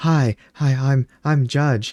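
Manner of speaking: light voice, very drawn out and slow. Retelling how someone else mimicked Judge, in a lightened voice imitating Judge. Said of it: "lightened your voice to sort of go".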